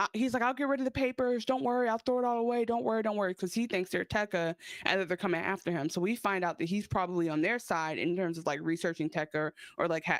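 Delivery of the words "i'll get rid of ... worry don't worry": high-pitched, light, toned-down yell. Retelling a scene where a character yells at visitors: imitating someone yelling. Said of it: "He yells".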